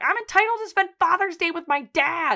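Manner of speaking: acted-out wild, unhinged, shrill, out-of-control yelling. Retelling a TV scene, quoting the character Sammy: imitating an unhinged yell. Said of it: "in the unhinged way that she yells".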